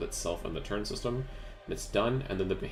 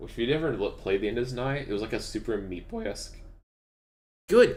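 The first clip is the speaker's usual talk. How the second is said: voice keeps cracking and breaking; 4 semitones higher, 4 dB louder than usual. Telling listeners about the End Is Nigh soundtrack, voice cracking. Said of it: "my voice needs to stop fucking cracking".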